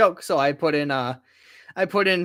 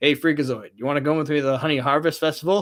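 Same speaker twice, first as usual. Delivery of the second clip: play-acted expressionless, dry, matter-of-fact tone. Praising a favorite cartoon character; deadpan Cosgrove impression. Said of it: "Just this deadpan delivery".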